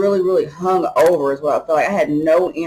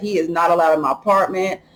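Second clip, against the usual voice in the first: ordinary delivery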